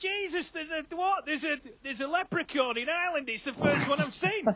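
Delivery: high-pitched, shrill yelling. Retelling shouting out a car window at a traffic light: retelling shouting out a window. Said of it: "I'm shouting out the window".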